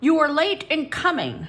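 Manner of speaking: harsh, grating voice. A narrator reads a voice confronting Ronifer for arriving late; harsh grating voice. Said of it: "the harsh voice grated".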